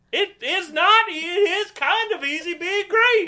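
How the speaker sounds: angry, very high, drawn-out delivery. Doing a line when another speaker prompts: angry Kermit the Frog voice. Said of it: "It's like angry Kermit says".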